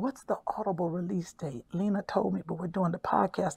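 whispering. Speaker asking a question while recording a podcast, whispering. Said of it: "I don't know why I'm whispering".

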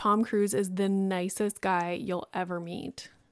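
normal talking voice

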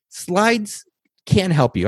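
very slow, drawn out, each word weighed deliberately. Giving presentation tips to listeners, the speaker states tip number nine, said slowly. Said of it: "I say that slowly".

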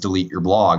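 plain

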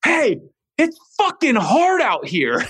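high, slow, stretched-out snapping tone.

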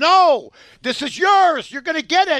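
acted, loud, high-pitched yell. Retelling what they yelled at the team they backed, retelling a yell. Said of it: "And I yelled".

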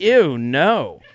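usual speaking voice

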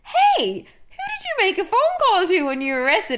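very high, swooping, playful teasing tone. Retelling a scene, acting out her joking question to Billy after sex. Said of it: "she's like jokingly".

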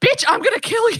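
mock piercing, shrill, very high-pitched scream. Recalling answering and hearing a woman's threat, retelling a woman screaming. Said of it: "woman that was like screaming".

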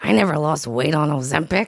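acted-out irritated, mad, indignant dad voice. Asked about a dad's medication side effects, the speaker quotes him: imitating an angry dad. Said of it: "He's so mad".

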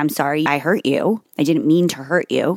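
ordinary delivery

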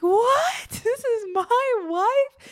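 play-acted astonishment, very high, very slow, excited disbelief. Retelling the man learning the lady is his wife: imitating excited surprise. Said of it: "he gets so excited".

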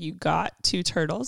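ordinary talk

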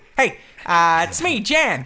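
high-pitched, loud, big goofy voice. Retelling showing off a homemade pelican costume on set: Jan Pelican voice. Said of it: "start talking like this".

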